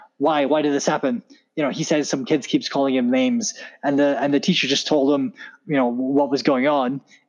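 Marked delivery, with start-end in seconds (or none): none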